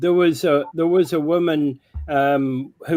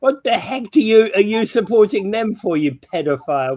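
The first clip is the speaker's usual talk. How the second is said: high-pitched, screamed outburst; 6 semitones higher than usual. Retelling what a woman screamed at a passing car: imitating someone screaming. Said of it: "she just screamed out from the wall".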